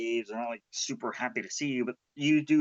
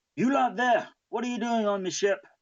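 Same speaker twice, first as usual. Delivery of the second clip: very high, barked delivery; 10 semitones higher than usual. Narrating a scene on a ship, voicing someone calling to the players in a barking voice. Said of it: "you can hear a barking voice".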